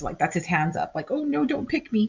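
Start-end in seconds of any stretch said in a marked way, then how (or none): 1.1-2.1 put-on timid, scared, shy boy's voice, pitched up. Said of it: "this boy is very shy to get picked".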